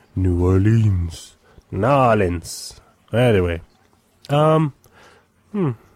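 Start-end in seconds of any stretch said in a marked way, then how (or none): 0.1-2.7 slow, drawn-out promo voice-over announcer delivery. Reading a comic series blurb, imitating the voice guys. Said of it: "How would the voice guys go?".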